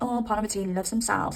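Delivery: ordinary delivery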